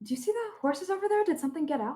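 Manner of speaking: soft, hushed half-whisper. Speaking in character to a companion the character taps: half-whispering. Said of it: "whispering to him".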